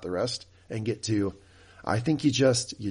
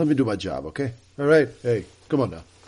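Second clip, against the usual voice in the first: put-on mobster enforcer voice, louder; 2 semitones higher, 5 dB louder than usual. Imitating a character who suddenly sounded like Luca Brasi: Luca Brasi voice. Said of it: "sound like Luca Brasi all of a sudden".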